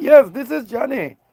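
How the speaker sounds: high, put-on Indian accent. Retelling a caller claiming to be the grandson, answering in an Indian accent. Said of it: "somebody with an Indian accent calls you".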